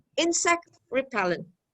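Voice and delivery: compound-noun stress on insect, repellent falling away. Teaching stress in compound nouns, stress on insect. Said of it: "But when we have a compound noun, the stress is on the first".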